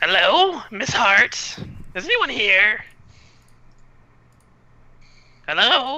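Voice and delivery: very high little kobold creature voice. In a role-play session, voicing a kobold who comes to fetch someone: candlelight kobold voice. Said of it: "A candlelight kobold".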